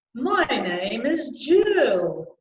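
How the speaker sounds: very slow, big, round, open resonant voice. Voice coach demonstrating opening up the mouth by saying her name: big round voice. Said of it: "big and round".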